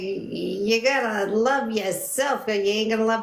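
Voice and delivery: strong, put-on New York accent. Recalling advice a woman gave years ago, the speaker quotes her in a new york accent. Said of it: "she was a total New Yorker".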